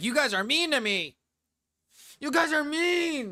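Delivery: acted-out, very high-pitched, loud whining. Describing a guy complaining his friends don't like him, doing mock-whiny complaining. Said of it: "He's very whiny in this".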